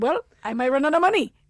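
put-on Dominican-accented speech. Retelling what a baseball player said: imitating a Dominican accent. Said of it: "please forgive my Dominican accent".

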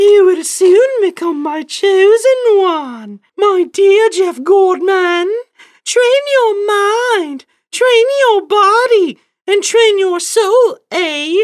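put-on sensual, sultry Canadian woman's accent, pitched way up. Retelling the mother's words to the speaker, in her sultry, high-pitched lady's voice with canadian accent. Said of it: "sultry, and yet high-pitched lady's voice with a Canadian accent".

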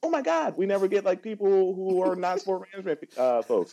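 very high, thrilled, gushing squeal of delight. Retelling raising hands in class, quoting a woman who was so excited: imitating someone excited. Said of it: "she was like so excited".

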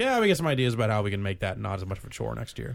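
normal talking voice

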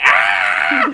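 loud high battle scream.

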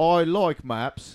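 put-on British accent. Speaker suggests doing a British accent, then tries it, a put-on British accent. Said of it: "Do a British accent".

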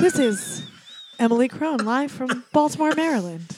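put-on public radio announcer voice. Retelling a co-host practicing into the microphone: Emily's NPR voice. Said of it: "your N P R voice".

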